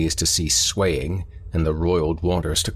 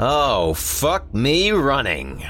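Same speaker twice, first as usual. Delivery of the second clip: nasal, noisy, high god or heron voice; 9 semitones higher than usual. Narrator voicing the god of Heron's exclamation, nasal and dinful. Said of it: "nasally and dinful".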